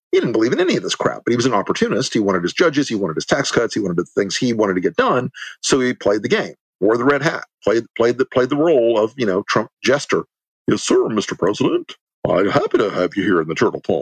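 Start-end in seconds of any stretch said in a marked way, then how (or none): 10.6-14.0 swooping, little cartoon turtle character voice. Imitating Mitch McConnell flattering the president: Mitch McConnell turtle voice. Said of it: "I don't know where that fucking voice came from".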